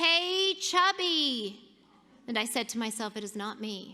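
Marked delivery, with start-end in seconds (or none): 0.0-1.6 furious, loud, high-pitched angry holler. Retelling a voice yelling on the sidewalk as she ran to work, imitating a loud angry yell. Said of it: "loud, angry voice yelling".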